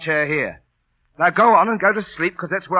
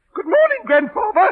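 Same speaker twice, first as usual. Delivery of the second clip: very high, little wooden ventriloquist dummy voice. A former ventriloquist shows someone their dummy: ventriloquist dummy voice. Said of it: "He's a ventriloquist dummy".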